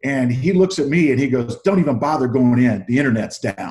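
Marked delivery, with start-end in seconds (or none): 1.6-3.7 put-on angry man voice, louder. Retelling what a man walking out of Starbucks said: imitating an angry man. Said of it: "just really angry".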